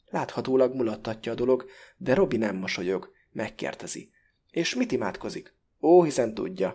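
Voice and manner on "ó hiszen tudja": superior, contemptuous, loud dismissive scoff. Blavatsky, asked by Robi about the prayer, answers superior and contemptuous. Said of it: "legyint Blavatsky fölényesen és megvetően".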